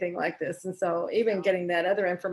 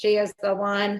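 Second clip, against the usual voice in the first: mock mechanical, robot-like voice. Recalling what the ones who scanned said to a client, imitating a robotic voice. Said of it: "it's that voice".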